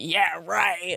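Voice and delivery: mock angry male scoffing. Retelling how men would react to her calling herself a model: imitating angry men. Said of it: "men get so mad".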